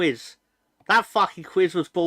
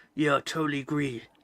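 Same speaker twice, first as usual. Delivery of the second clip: put-on grizzled war-movie veteran voice, much quieter; 2 semitones lower, 6 dB quieter than usual. Reading a commenter's agreement aloud, like a grizzled 1980s war-flick veteran. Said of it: "I read it like she's a grizzled veteran in nineteen eighties war flick".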